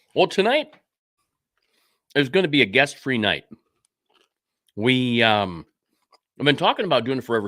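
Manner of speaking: speaking with a mouth full of food. Show host talking to viewers while eating, talking with mouth full. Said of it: "I'm talking with food in my mouth".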